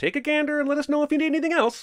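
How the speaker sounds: sarcastic, mock-cheery, chirpy and high with fake politeness.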